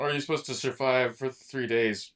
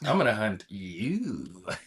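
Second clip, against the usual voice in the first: put-on seductive, playful voice; 2 semitones lower than usual. Acting out the story's hunter as imagined: put-on seductive, playful voice. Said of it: "so seductive and kinda playful".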